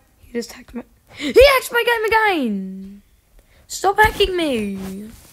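loud, furious, fuming, very angry voice. Streamer whose game keeps getting hacked addresses the hacker, so mad. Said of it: "I'm so mad right now".

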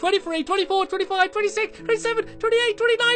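very high, loud silly counting voice.

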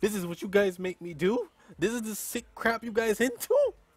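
high, scared, panicking outburst of disbelief. Before welcoming viewers to his show, the host reacts: panicking, scared. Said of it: "I'm panicking".

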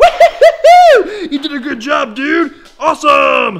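booming, drawn-out, loud, swooping, high gushing excitement. Showing owners how to praise their Husky pup, really excited praise. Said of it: "get really excited and be like".

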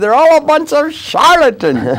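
put-on very high, swooping Hungarian accent. Retelling what a feisty man said about the psychiatric community, in a Hungarian accent. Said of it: "He had this Hungarian accent".

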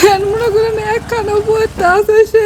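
crying, sobs heard through the words.

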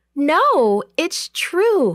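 high, crying-out exclamation. Narrator reads a character's reply to a voice inside, crying out. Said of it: "Rhoda cried".

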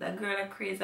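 ordinary delivery

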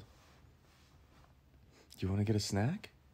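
put-on condescending voice, as if to a small child. Checking tone with Tony, the speaker talks as if to a four-year-old: voice for a small child. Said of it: "appropriate for talking to a 80-year-old or a 4-year-old".

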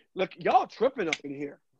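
ordinary talk, nothing marked

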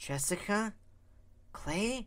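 hesitant, slow delivery. A woman slowly names the people in front of her, halting and slow. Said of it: "her halting mind slowly named them".

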